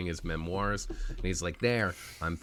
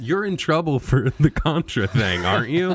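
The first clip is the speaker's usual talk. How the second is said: high, very loud heckling yell; 6 semitones higher, 11 dB louder than usual. Retelling how reporters questioned the president: imitating reporters yelling. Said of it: "they were yelling".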